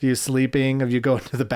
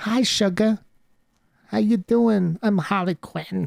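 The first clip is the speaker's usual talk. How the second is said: high-pitched, slow drawl with dragged words; 8 semitones higher than usual. Acting out a film scene, quoting the character: Harley Quinn voice. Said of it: "you sound just like her".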